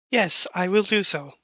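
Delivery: very calming, soothing voice. Answering a crewmate in character as the flying exocom: very calming voice. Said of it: "that's a very calming voice".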